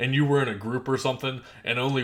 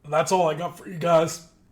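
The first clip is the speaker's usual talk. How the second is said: cracking voice, breaking mid-line, high and loud; 5 semitones higher, 5 dB louder than usual. A streamer wraps up the hour stream for viewers, voice cracking. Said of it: "my voice just cracked horrible right there".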